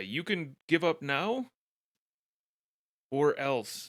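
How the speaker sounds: shouting. During a tabletop battle, a player's character calls to the last remaining foe: yelling a threat. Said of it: "yell to the last guy".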